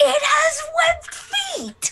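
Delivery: high, slow, excited yell. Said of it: "I yell up".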